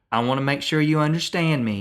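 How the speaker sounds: imitated strong Southern accent. Retelling what a little girl said to a wife: imitating a strong Southern accent. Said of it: "putting on a real strong Southern accent".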